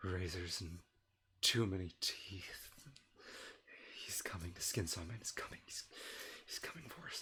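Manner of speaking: low, hushed, muttered whisper. Voicing Peter after a player can't hear him: whispering as Peter. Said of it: "I'll get a little bit closer for these whispers".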